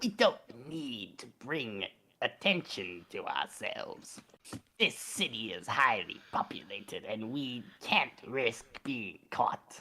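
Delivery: slow, goofy, silly put-on voice, dragged out. Reading a creepypasta character's line aloud: Crypt Keeper voice. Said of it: "kinda sounded like the Crypt Keeper".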